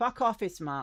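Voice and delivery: furious, very loud, high-pitched angry shout. A game master voices a character yelling through her door at visitors: Irina's angry shout. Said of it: "you hear from angry".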